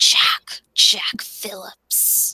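eerie, creepy, breathy whispered man's voice. Recapping a movie scene where a caller speaks, imitating a creepy male voice. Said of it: "that creepy male voice going".

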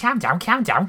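put-on very high, loud, comic Scouse accent. Trying out a Scouse accent, quoting Harry Enfield's Scousers sketch: Harry Enfield Scousers impression. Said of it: "the Scousers in Harry Enfield".

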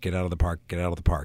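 put-on repeated whisper. Retelling a production assistant passing by, imitating a whispered mantra. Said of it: "whispering that's like a mantra".

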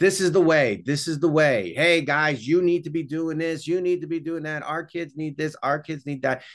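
sermonizing preacher tone. Demonstrating one of three stereotypical roles people fall into, preachy sermonizing voice. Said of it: "That's the preacher".

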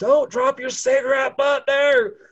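very high, loud screaming. Recalling the burning years in Wyoming, retelling screaming at people. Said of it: "just screaming at people".

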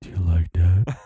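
put-on deep female voice. Showing what a deep-voiced woman sounds like in your ear: imitating deep-voiced woman in bed. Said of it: "this is what a deep chick, a deep voice chick".

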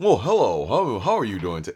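put-on American accent. Discussing an actor's American accent in a movie, doing Henry Cavill's American accent. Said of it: "his American accent was very".

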